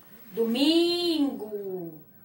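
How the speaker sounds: domingo with strong stressed middle syllable mi. Portuguese lesson finding the strongest syllable: stress on mi in domingo. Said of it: "Como é que a gente chama domingo? ... O mi é a sílaba mais forte da palavra".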